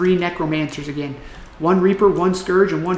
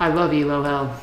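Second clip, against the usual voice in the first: mocking, sarcastic tone, lower pitch; 2 semitones lower than usual. Talking to viewers while watching gameplay, sarcastic. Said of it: "hear the sarcasm in my voice".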